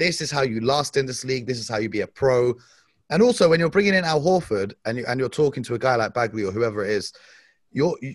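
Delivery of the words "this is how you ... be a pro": ordinary talk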